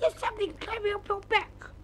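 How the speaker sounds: sudden, very high-pitched cry of alarm. Suddenly seeing something, he cries out to his companion: crying out. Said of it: "he cried".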